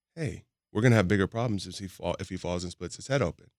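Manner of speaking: ordinary delivery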